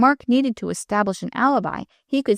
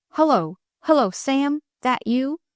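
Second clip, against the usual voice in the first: rough, gruff, wary, guarded voice calling out; 4 semitones higher than usual. A narrator reads Pat calling out to Sam: gruff, guarded voice. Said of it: "in a gruff, guarded voice called".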